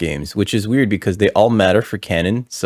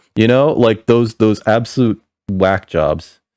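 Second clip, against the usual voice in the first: normal talking voice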